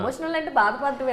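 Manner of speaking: normal talking voice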